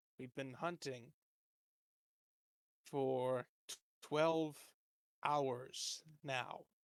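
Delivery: slow, fed-up, exasperated, frustrated tone. Voicing a guard who has just sheathed his scimitar: frustrated. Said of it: "with no small amount of frustration".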